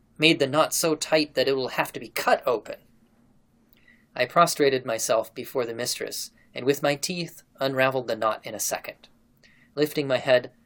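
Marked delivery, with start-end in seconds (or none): none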